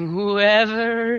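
put-on little, tremulous, quivering old-woman voice. Asked to do her line for the group, imitating her quivering delivery. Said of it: "there's that little quivering too".

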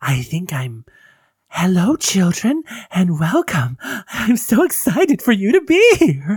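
creepy, manic clown voice. Showing the character voice for hosting spooky campfire stories: creepy, manic camp counselor voice. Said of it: "it's a little creepy, a little manic".

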